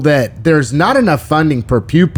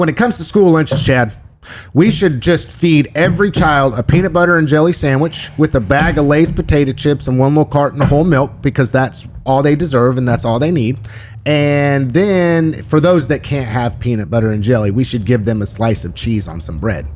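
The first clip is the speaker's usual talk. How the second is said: ordinary talk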